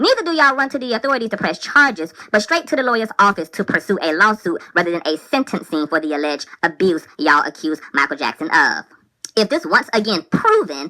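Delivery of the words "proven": heavy stress leaning hard on 'proven'. Arguing against a celebrity's accusers, the speaker puts stress on 'proven'. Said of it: "I want to emphasize that word proven".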